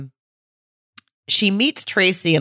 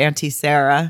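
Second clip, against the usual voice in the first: ordinary talk, nothing marked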